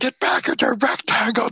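shrill, very high-pitched screaming. Retelling screaming at an outfielder from the stands: imitating own screaming. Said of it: "Just scream at him".

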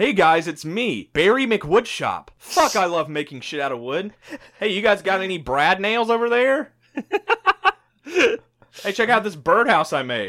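loud, high, taunting caricature voice. Describing people who lean in too far, the speaker mocks them: mocking impression of them. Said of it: "Like they'd be like".

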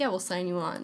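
usual speaking voice

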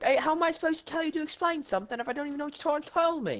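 put-on high-pitched, fast British accent. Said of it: "Why the fuck did you just go British".

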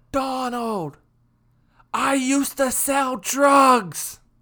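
very high, loud, drawn-out carrying shout. Retelling what he called out across a parking lot, retelling a loud call. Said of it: "tell me very audibly".

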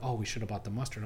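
ordinary delivery

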